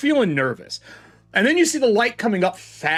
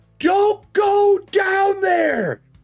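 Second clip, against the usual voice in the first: yelling, much higher and slower; 13 semitones higher, 4 dB louder than usual. Narrator voicing a woman who landed on the far side, facing you; yelling across a chasm. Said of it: "She's yelling across the chasm".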